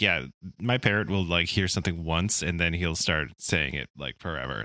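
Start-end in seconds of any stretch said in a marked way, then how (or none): none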